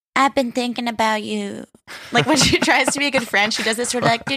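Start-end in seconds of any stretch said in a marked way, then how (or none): 0.1-1.6 put-on sweet baby-talk voice. Recapping a scene where Lala comes over: imitating Katie's baby voice. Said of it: "Katie does this baby voice".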